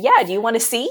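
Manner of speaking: put-on joking tone. Retelling her own joking reply to her husband on a walk: retelling own joking reply. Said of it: "jokingly, I said".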